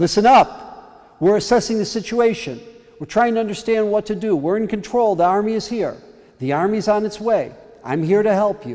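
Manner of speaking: loud high shout. Retelling how he ordered people in a panicked hall: retelling his own shout. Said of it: "so I started shouting again".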